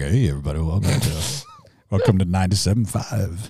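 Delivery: low, worn-throat radio voice at bottom of range.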